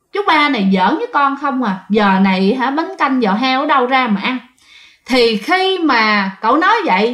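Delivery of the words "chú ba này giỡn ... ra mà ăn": ordinary delivery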